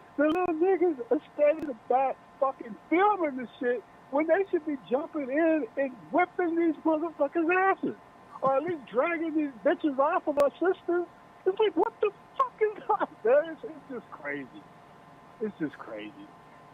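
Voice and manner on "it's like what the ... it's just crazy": exasperated, higher pitch. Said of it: "I hear the frustration in your voice".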